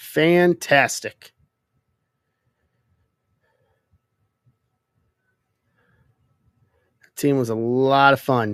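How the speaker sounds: dripping with sarcasm. Talking about a nineties team with a friend: sarcastic. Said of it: "Cue sar- cue sarcasm, please".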